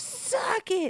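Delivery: put-on angry woman's shout. Retelling how an angry woman pointed and yelled: imitating an angry woman. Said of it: "so angry and pointing her finger".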